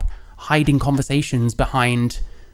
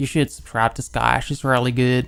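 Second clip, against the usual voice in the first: put-on American accent with a slight southern tinge. Speaker showing the american accent they can kind of do: put-on american accent. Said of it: "I can kind of do an American accent".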